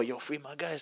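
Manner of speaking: hushed voice. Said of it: "I have to whisper".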